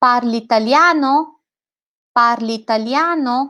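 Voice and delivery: pitch rising on the end of italiano. Demonstrating how to ask a question in italian, with a rising end. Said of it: "this is the way you should emphasize it".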